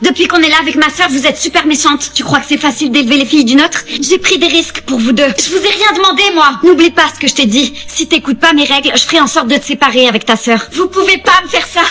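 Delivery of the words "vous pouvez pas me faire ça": protesting outburst, cried out. Answering a threat of being separated from a sister: yelling. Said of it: "pourquoi tu cries ?".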